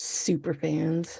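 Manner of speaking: disdainful. Two speakers trying out a name for their super fans, disdainful. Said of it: "with that kind of disdain in our voice".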